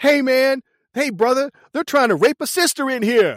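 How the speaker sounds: mock high-pitched yell, shouting out. Retelling a car chase scene from a movie, imitating a character yelling. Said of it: "And he yells".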